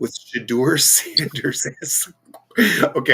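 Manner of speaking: slow speech breaking into laughter. Discussing a football game, laughing while talking. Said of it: "I'm sorry, I'm laughing".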